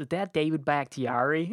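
put-on heavy Wisconsin accent, laid on thick. Act out a guy in front of you asking about a downed lineman, in a big, thick Wisconsin accent. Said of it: "in a big, thick Wisconsin accent in front of me goes".

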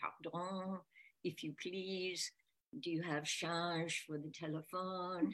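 strong, distinct put-on French accent. Retelling a man asking for change for the telephone, in a distinct french accent. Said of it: "a very distinct French accent saying".

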